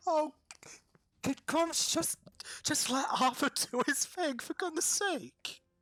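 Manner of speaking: loud, very high speech with laughter through the words. Voicing a character who tells Grumps to let Arthur work, laughing while talking. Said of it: "she is laughing".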